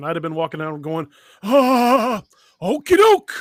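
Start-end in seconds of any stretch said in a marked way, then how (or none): 1.4-3.4 loud, high cry with long drawn-out "Ah". Joking about walking around with a hand glued on: Christopher Lloyd impression. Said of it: "my best, uh, Christopher Lloyd impression".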